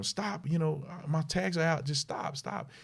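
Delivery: mock high yelling. Retelling a traffic stop, the speaker acts out the woman yelling at the man. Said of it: "she's yelling at him".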